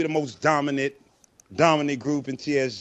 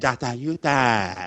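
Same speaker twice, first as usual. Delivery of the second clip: put-on Chinese accent, name drawn out; 3 semitones lower than usual. Showing listeners how to say a nickname, in a chinese accent. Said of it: "You gotta say the Chinese accent".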